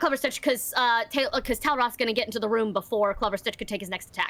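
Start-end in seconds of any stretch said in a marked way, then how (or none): none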